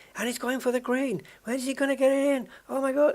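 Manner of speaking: very high, loud, thrilled sports commentary call. Imitating Murray Walker commentating on snooker: imitating Murray Walker's excited commentary. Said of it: "Murray's giving it the".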